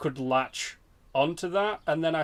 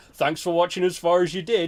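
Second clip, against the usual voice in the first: play-acted, dry, snide, sarcastic delivery; 2 semitones higher, 4 dB louder than usual. Retelling a reply to a rude online comment: retelling a sarcastic reply. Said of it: "just to be a sarcastic dick".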